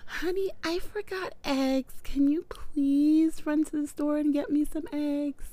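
sweet pleading voice. Acting out a request to your honey after yelling at everyone, put-on really sweet voice. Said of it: "the really sweet voice".

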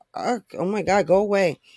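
normal talking voice

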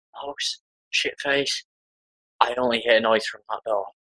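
quiet, hushed whispering. A player speaking in character to another character during the game: whispering. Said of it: "I'm gonna whisper".

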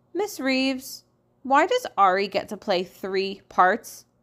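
plain

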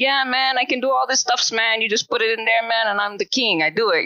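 put-on Nepalese accent. Acting out how he really talks and his attitude, in a big, thick Nepalese accent. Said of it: "thick Nepalese accent".

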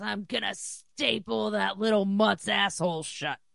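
play-acted, pissed-off, ranting angry outburst. Retelling how a man reacted to a dog fouling his yard: angry outburst. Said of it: "he gets all pissed off and goes".

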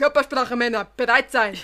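loud shouting in Bavarian dialect. Finding it funny, the speaker imitates a man shouting in Bavarian dialect. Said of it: "er mit seinem bayerischen Dialekt".

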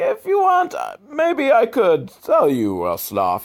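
very high, swooping, exaggerated sing-song Italian accent. Showing the only accent she can do, in a stereotypical Italian accent. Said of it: "Stereotypical Italian accent is kind of really the only accent".

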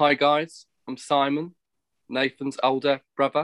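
put-on London Cockney accent. Asked how he sounds, a speaker gives a bit of his imitating Simon's accent. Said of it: "give you a bit of my Simon accent".

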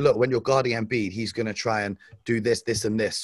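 plain

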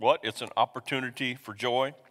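plain

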